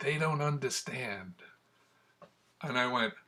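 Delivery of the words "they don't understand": soft, hushed, secretive half-whisper. Retelling what a dying man said in a hospital room: imitating a half-whisper. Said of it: "he whispers in my ear".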